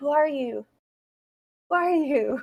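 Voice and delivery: loud, projected whisper. Voicing an unseen figure in the trees questioning the party: loud whisper. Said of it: "a loud whisper that says".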